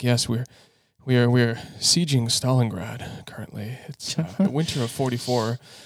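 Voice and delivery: imitated muttering under breath. Speaker acts out what they say while shooting a model, imitating muttering under breath. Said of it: "under my breath I'll say something like".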